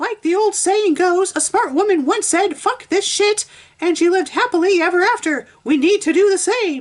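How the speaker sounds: very high-pitched, loud, belting cartoon voice. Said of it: "I'm using that voice for the actual Missus Puff".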